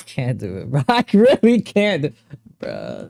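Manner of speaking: words breaking with laughter, swooping pitch. On a live stream, unable to go on, laughing while talking. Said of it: "Why are you laughing".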